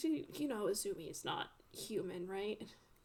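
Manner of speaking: voice dropped low and quiet, hushed. Voicing a character who asks about the aberration case, lowered voice. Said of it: "he kind of like lowers his voice and he says".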